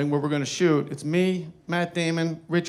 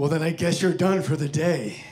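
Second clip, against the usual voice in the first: scornful, dismissive brush-off tone. Retelling the reply to turning down a beer: Clint Eastwood voice. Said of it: "And that's how he said it".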